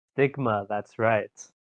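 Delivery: stoic, deadpan mobster voice. Introducing yourself with a catchphrase: stoic mobster delivery. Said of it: "you said it like a fucking, like, stoic mobster".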